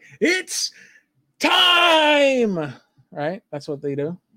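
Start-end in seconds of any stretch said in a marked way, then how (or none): 0.2-2.7 very high, loud fight-announcer call, time stretched. Imagining a UFC announcer calling the moment, UFC announcer voice. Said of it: "if they had a like a UFC announcer there".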